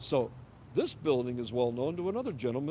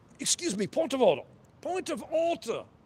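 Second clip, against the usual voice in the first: fake put-on British accent, pitched very high; 11 semitones higher, 4 dB louder than usual. Mocking a man who talks like he has a British accent: put-on British accent. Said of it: "He talks like like he's got a British accent".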